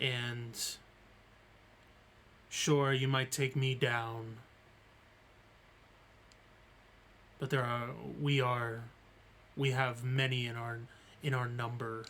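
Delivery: put-on raspy creature voice. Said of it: "a creature in a raspy, like, voice".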